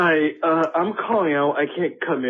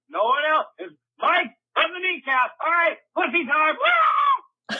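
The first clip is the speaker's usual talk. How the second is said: loud yelling; 11 semitones higher than usual. Leaving a message that he can't come to work: yelling. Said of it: "I'm yelling".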